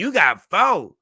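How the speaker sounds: high, slow, loud disbelief. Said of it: "And she like".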